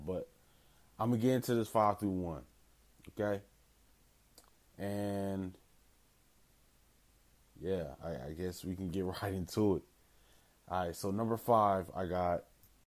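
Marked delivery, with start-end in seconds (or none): 0.1-9.8 drowsy, groggy, low energy. Host just waking up, starting a five-through-one countdown, groggy and low energy. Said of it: "I'm sorry if I sound kind of groggy, kind of like low energy".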